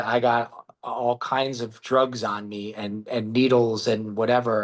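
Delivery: ordinary delivery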